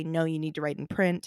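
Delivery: ordinary delivery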